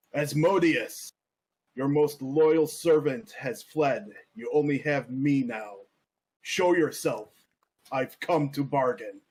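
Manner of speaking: loud yelling, fully in character. Calling for Asmodeus in character during a fight: in-character yelling out. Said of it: "I'm going to yell out".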